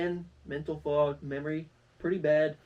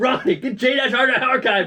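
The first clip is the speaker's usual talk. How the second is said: very loud, high, intense voice; 9 semitones higher, 13 dB louder than usual. Retelling how another speaker told them the site name: imitating an intense command. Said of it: "the most intense thing ever".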